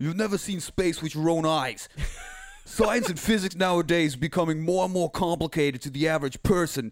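put-on slight New York accent, laid on. Trying out voices with others, told to do New York, in a New York accent. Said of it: "do a little New York".

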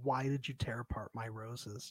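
very soft, hushed, weepy acted crying voice. Retelling a reality show scene, imitating Francesca crying. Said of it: "Francesca started crying".

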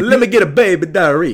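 very loud, high-pitched, put-on Italian accent. Acting out ordering food, in a put-on Italian accent. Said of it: "you have to order an Italian accent".

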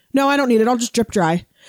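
usual speaking voice

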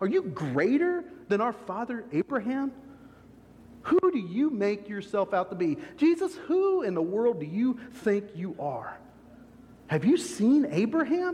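thick, dripping, mocking sarcasm. Speaker acting out the questioners challenging Jesus: mock sarcastic questioning. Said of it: "it's just dripping with sarcasm".

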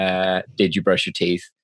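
ordinary talk

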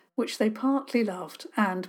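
plain reading voice

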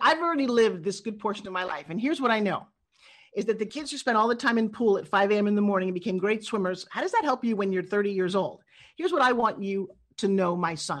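ordinary talk, nothing marked

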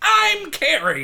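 put-on rampaging voice. Joking about how Carrie rampages through town: mock rampaging Carrie. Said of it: "as though Carrie is rampaging through the town being like".

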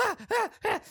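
very high, freaked-out panicked yelps. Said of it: "He's really fucking freaking".

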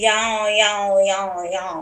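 drawn-out fake Californian twang, very slow. Greeting the co-host at the start of an episode: put-on California accent. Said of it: "That's a new accent on the block".

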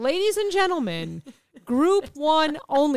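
acted out fed-up, exasperated, irritated announcer voice. Retelling a boarding announcer calling passengers: imitating an annoyed gate announcer. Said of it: "he was getting pissed at these people".

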